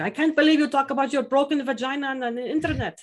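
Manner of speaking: put-on thick Italian mother accent. Quoting the speaker's old-school italian mom, heavy italian accent. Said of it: "with a very heavy accent".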